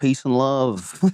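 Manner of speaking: put-on Liverpool musician voice. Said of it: "is that your impression of [name]?".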